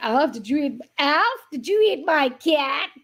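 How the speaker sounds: clumsy fake American accent, slow, drawn out. Retelling what the guy says to Alf as he walks out, in a really bad American accent. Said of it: "That was my really bad American accent".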